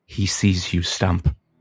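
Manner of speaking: threatening whisper. Voicing the possessed wife who leans close to the ear: whispering. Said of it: "and whispers".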